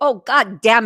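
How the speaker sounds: put-on thick German accent. Recalling what made them laugh as a kid, imitate their dad: thick German accent. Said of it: "he had a thick German accent".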